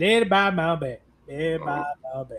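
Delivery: put-on fast mumbling drawl. Quoting a movie character who sounds like Boomhauer: imitating a Boomhauer-like voice. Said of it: "the dude that just sounds like Boomhauer".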